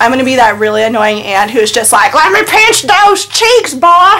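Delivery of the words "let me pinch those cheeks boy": put-on high, slow southern drawl. Playing a really annoying aunt, southern accent. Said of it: "I love the southern accent you threw in there".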